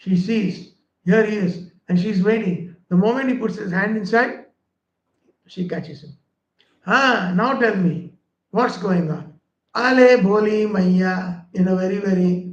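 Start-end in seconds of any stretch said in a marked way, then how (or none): 9.8-11.4 mock lisping child voice, much slower. Storyteller voicing the boy caught by the gopi, imitating a child's lisping speech. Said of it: "like how the children speak".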